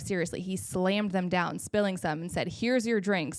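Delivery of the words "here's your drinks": mock hostile, confrontational, aggressive delivery. Retelling how a server slammed drinks down: imitating an aggressive server. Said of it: "in the most aggressive tone I've ever experienced".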